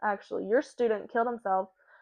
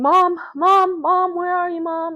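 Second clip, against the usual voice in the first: frantic, desperate screaming, high and loud; 9 semitones higher, 10 dB louder than usual. Retelling running inside the house to find mom: imitating screaming for mom. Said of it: "I'm just screaming for my mom".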